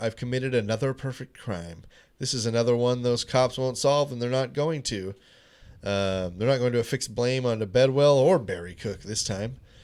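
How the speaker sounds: ordinary talk, nothing marked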